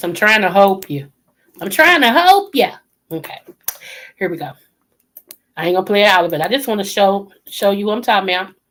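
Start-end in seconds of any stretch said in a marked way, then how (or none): 0.0-2.7 put-on granddaddy-style old man's voice. Speaking in granddaddy's voice while asking the viewer to hold on: imitating granddaddy's voice. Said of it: "in my granddaddy's voice".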